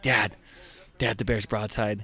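put-on excited young boy voice, pleading. Retelling how his son begged from behind the camera: imitating his excited eight-year-old son. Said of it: "the whole time he's like".

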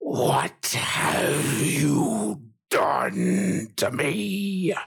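furious dragon voice, rasping, rough and swooping. Narrating a fight, the dragon clawing the ground and staring everyone down: deep angry dragon voice. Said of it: "with a deep, angry voice".

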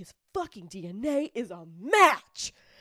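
play-acted thrilled, loud, slow, drawn-out excited announcement. Retelling how a sheriff reacted to a DNA match: imitating his excitement. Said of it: "he was, like, excited".

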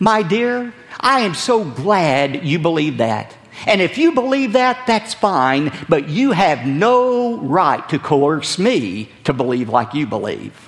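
acted, heavily condescending, smug, sugary, patronizing tone. Quoting a talk show host's reply about belief, mock-condescending tone. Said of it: "in the most condescending tone he could muster".

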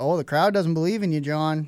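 normal talking voice

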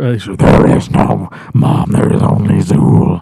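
ghostly, spooky, eerie put-on voice. Retelling a girl's line to her mom, said in a spooky voice. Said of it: "first she says it like spooky".

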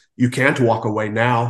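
put-on gravelly doctor voice. Describing a game's callout after the game ends: gravelly doctor voice. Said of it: "in the real grovelly doctor voice".

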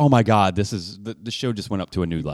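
ordinary talk

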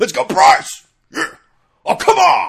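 shrill, booming, very high, loud, drawn-out rough hollering. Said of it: "yelling at the fucking teenager umpires".

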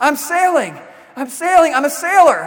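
joyful, elated, high, drawn-out yell. Speaker tells of a scared man tied to the mast who starts sailing: retelling an elated yell. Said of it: "he starts yelling".

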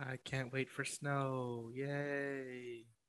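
sarcastic fake cheer, very slow and drawn-out. Dreading the coming snow: sarcastic excitement. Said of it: "You sound so excited".

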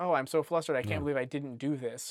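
ordinary talk

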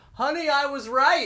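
mock very high-pitched, shrill yell. Retelling an older man leaving the wedding venue: imitating a man shouting. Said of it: "he shouted".

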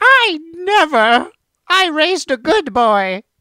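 very high, loud, slow, outraged, scandalized granny voice. Joking about his grandma hearing about butt chugging: imitating a shocked grandma. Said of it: "my grandma ... she was like".

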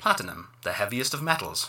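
recorded, automated system announcement voice. Game master voices a bar touchscreen after a password is typed; automated voice. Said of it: "You hear an automated voice say".

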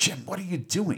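high, alarmed, frantic, panicky outburst. Retelling a film scene, quoting Bones: Bones freaking out. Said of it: "Bones starts freaking out".

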